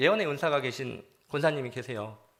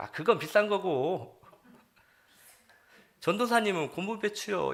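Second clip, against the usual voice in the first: put-on Jeolla regional accent; 6 semitones higher than usual. Retelling a church elder's answer to the speaker's question, in Jeolla dialect. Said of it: "그 전라도 사투리로 이러셨어요".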